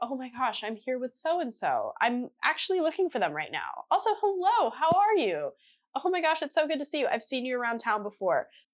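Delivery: swooping, sing-song art-scene socialite small-talk voice. Retelling how a socialite greeted people at art events: imitating own past socialite self. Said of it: "I used to be a little Nepo baby socialite".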